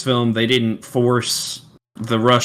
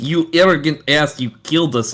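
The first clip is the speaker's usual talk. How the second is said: silly, goofy put-on Russian accent, pitched up; 5 semitones higher than usual. Retelling what a guy says, the speaker quotes him in a goofy Russian accent. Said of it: "it's a guy saying in a Russian accent".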